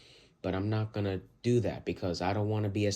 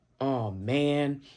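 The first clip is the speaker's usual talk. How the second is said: high, sassy back-talk tone; 5 semitones higher than usual. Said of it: "it sounds like I'm trying to be sassy".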